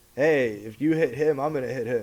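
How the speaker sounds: ordinary talk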